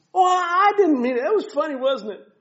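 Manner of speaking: mock innocence, high, wide-swinging pitch.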